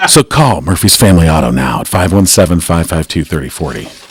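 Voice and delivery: sexy announcer-style read. Reading a car shop ad on air: sexy ad read. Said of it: "Thank you for that sexy read".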